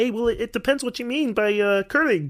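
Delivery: courteous, hedging frog-puppet character voice. Show how to make the character more polite and more obfuscating, in a Kermit the Frog voice. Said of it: "Kermit the Frog more polite and more obfuscating".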